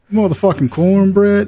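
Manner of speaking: put-on thick Southern accent. Imitating a cook the friends are talking about, in a thick southern accent. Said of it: "thick Southern accent".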